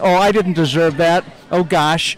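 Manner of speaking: ordinary talk, nothing marked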